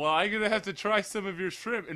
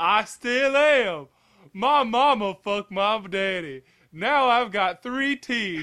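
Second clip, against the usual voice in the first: high, slow Southern voice. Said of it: "You sound like fucking Bubba from Forrest Gump".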